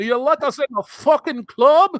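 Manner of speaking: put-on very high, loud, terrible thick Scots-Irish accent. Imitating women trying to get into a nightclub: terrible thick deep scottish or irish accent. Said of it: "That was a terrible impersonation".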